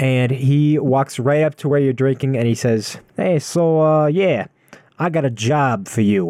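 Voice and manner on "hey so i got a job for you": put-on Italian gangster-style mobster accent. Game master voicing a dragonborn gnome approaching the players at a bar, italian mobster voice. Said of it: "kind of an Italian mobster kind of thing".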